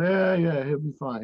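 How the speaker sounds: put-on old Italian man's accent. Retelling what an old Italian man said after looking at his teeth: imitating an Italian accent. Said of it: "In his Italian accent".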